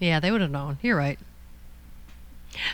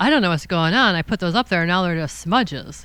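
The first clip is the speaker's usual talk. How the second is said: plain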